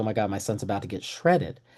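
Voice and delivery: alarmed exclamation, on the edge of panic. Retelling a friend's words as his son ran toward glass: imitating someone in a panic. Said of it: "he's almost in a panic".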